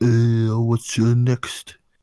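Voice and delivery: put-on French accent. Imagining offering McDonald's items as a surrender, in a fake French accent. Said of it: "That's the accent?".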